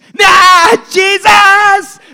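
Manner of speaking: very high, loud yell. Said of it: "he yelled louder".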